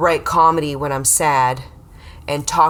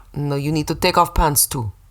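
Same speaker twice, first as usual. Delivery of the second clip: sketchy put-on Russian man accent. Playing the guy giving results back in a bit: sketchy russian guy accent. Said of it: "I know you have the Russian accent".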